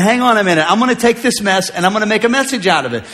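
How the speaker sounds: ordinary talk, nothing marked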